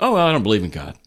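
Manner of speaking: put-on casual, flippant, fast delivery. Describing how someone casually states their disbelief, imitating a fast, flippant remark. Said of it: "they say it fast and flippant".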